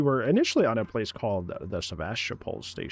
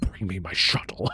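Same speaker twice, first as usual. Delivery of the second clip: put-on furious, fed-up, pissed-off tone; 4 semitones lower than usual. Quoting the original film's version of a line: imitating a pissed-off delivery. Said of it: "he's pissed off".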